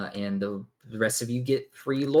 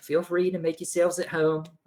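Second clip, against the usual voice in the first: put-on, pitched-up Australian accent; 8 semitones higher than usual. Looking to the three of you inside, he speaks in an Australian accent.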